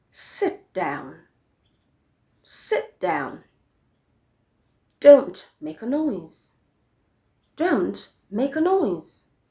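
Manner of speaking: falling intonation on "down" and "noise". Demonstrating intonation for commands to learners: falling intonation. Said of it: "You also use a falling intonation for commands".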